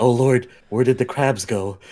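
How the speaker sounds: whispering in an acted character voice. Speaking as Tink in the game: whispering in character. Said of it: "Tink's gonna whisper".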